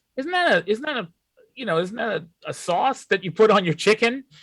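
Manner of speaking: high, mock naive, clueless-sounding voice.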